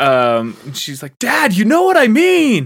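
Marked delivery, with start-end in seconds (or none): 1.2-2.7 really upset, very high-pitched, raised voice. Retelling how she reacts to her dad: imitating someone getting upset. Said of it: "she starts getting real upset with you".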